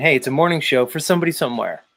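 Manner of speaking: normal talking voice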